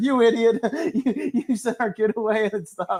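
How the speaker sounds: high-pitched, angry scolding yell. Retelling a sketch where the wife berates her husband: imitating her yelling. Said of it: "the wife yelling at him".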